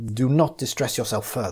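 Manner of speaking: plain reading voice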